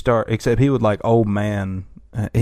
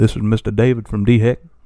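put-on southern accent. Quoting the South Carolina governor's press updates: Henry McMaster impression. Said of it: "Pretty spot on".

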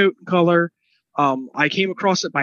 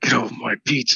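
very low, gravelly voice; 7 semitones lower than usual. Suggesting a casting choice for an audio version: Clint Eastwood impression. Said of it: "I'm really leaning into Clint Eastwood, like, from Gran Torino".

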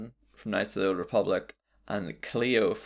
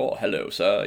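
courteous, polite robotic butler voice; 3 dB louder than usual. Describing a game's robot butler, imitating it: imitating the butler robot. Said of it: "the robot from the start of Fallout Four who's like".

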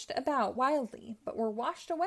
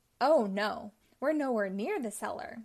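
ordinary delivery, nothing marked

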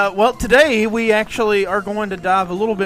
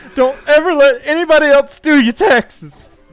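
mock tearful, sobbing, high, loud crying; 7 semitones higher, 7 dB louder than usual. Quoting a movie character's line from Heavyweights, imitating someone crying. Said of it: "He's crying".

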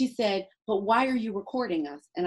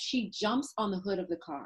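plain

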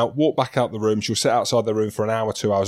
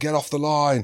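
mock screaming; 4 semitones higher than usual. A parent describing shouting from the rugby sideline, retelling a sideline scream. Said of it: "I'm screaming".

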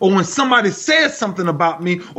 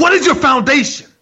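fast, high-pitched screaming; 6 semitones higher, 4 dB louder than usual. Recalling jumping up on the floor to address them, the speaker re-enacts it: retelling a scream. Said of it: "I screamed it quickly".

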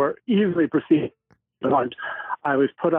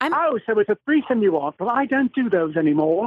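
put-on British accent, higher pitched; 7 semitones higher than usual. Quoting a character's line from a farce: british accent. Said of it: "you doing a, a British accent".

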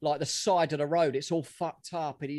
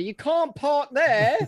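very high-pitched, loud yell; 9 semitones higher, 7 dB louder than usual. Retelling a man shouting out the window at a crash: imitating someone shouting. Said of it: "he just shouts out the window".

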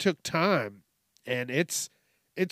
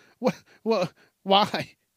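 mock condescending tone, higher; 4 semitones higher than usual. Retelling a woman at the gym questioning someone filming: imitating a condescending tone. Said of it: "a condescending tone".

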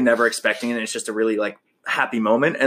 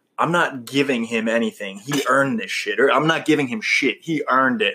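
ordinary talk

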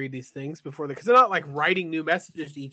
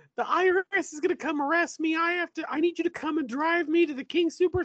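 put-on crying, much higher; 12 semitones higher than usual. Retelling great-grandma's phone call to grandma, imitating great-grandma crying. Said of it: "my great-grandma would call grandma crying".

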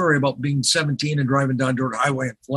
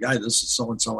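plain

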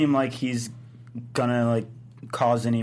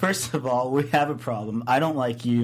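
ordinary talk, nothing marked

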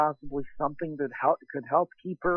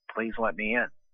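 put-on low, flat, feelingless, droning monotone; 6 semitones lower than usual. Reading a creepy encounter aloud, voicing the girl at the door: emotionless drone-like monotone. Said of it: "she said in a very emotionless, drone-like monotone way".

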